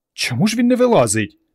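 whisper shaking with excitement. Varka speaks with Ivan and Petro while they wait: whispered, trembling with excitement. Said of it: "прошепотіла Варка, тремтячи від хвилювання".

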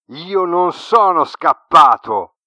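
very loud, high roar through a whimper. Reading a story aloud, voice a character's reply, roaring while whimpering. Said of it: "ruggì piagnucolando".

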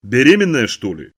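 sudden, dog-like barking voice. Reading a story, Dad suddenly lifts his head and asks, barking voice. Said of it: "лающим таким голосом спрашивает".

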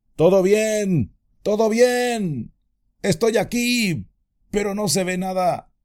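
faint, very high, weak shout, drawn out. Having slipped down a cliff, he answers the calls from above, shouting weakly. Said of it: "Frodo gritaba con voz débil".

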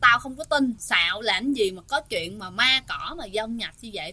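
ordinary delivery

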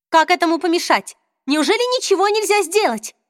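alarmed, panicky exclamation. Narrator reading a woman's line to her companions, exclaiming in panic. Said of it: "в панике воскликнула Изабель".

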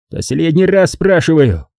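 high, harsh, barked delivery. Huang leans across the table at Gam, trying to look threatening, barking. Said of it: "рявкнул он".

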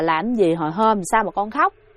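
ordinary talk, nothing marked

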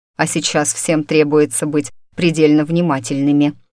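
plain

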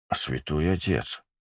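muttering in surprise. Reading a man's words on first meeting the narrator, surprised mutter. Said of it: "удивленно пробормотал он".

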